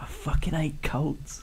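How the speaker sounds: conspiratorial, hushed, theatrical stage whisper. Role-playing, Alea stage-whispers to Alduin and John; stage whisper. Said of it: "stage whispers".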